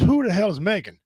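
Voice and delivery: ordinary delivery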